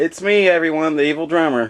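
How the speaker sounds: irritated, reluctant, annoyed, slightly high voice. Greeting the other speaker's viewers after being urged to speak: sounding annoyed. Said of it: "You sound like you were annoyed".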